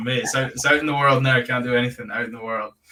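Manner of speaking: ordinary talk, nothing marked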